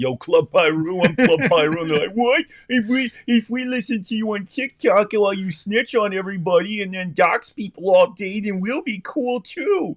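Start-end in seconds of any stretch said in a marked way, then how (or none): 0.0-1.8 lame, dorky put-on wannabe voice, ridiculing. Talking about TikTok fans, the speaker mocks some dork, putting on a dorky voice. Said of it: "some dork is".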